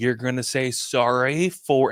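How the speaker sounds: mock patronising, condescending, talking-down tone. Repeating what she told him today, mimicking her condescending tone. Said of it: "it's always this condescending".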